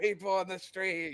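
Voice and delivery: very loud, drawn-out yell. Calling out to people on the street: yelling out really loud. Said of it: "and I yell out really loud".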